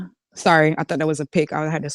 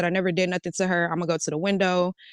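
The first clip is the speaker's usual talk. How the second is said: ordinary delivery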